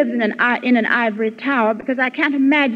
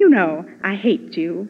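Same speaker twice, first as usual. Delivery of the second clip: tender, mild, low, gentle and charming voice; 4 semitones lower than usual. Retelling what the chinese speaker said to the japanese, imitating a gentle smiling delivery. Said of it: "said with his charming and gentle smile".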